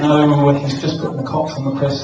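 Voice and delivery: ordinary talk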